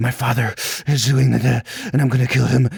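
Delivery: mock out-of-breath, gritted teeth. Mocking an actress's line readings, imitating breathless delivery. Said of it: "she does this breathless".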